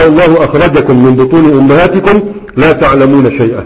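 ordinary delivery

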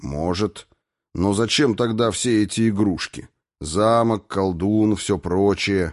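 plain

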